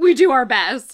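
very loud, indignant and angry voice. Retelling own reply to an imagined critic: retelling an angry reply. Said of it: "I said that kind of in an angry way".

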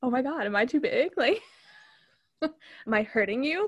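eager, worked-up, excited, drawn-out delivery. Retelling a movie sex scene, imitating Chip sounding excited. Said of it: "he's all excited".

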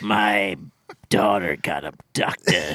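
low, slow, grumbly grim action-hero movie voice.

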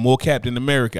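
ordinary talk

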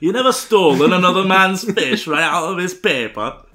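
butchered northern English accent. Ending a comic bit, the speaker does a butchered northern accent. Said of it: "me butchering the northern accent".

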